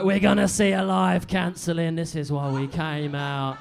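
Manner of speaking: mock gleeful, eager, relishing anticipation. Mocking audience members rubbing their hands together: imitating gleeful audience members. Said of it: "Few of you rubbing your hands together like".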